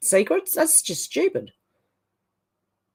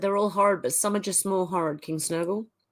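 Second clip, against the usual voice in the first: usual speaking voice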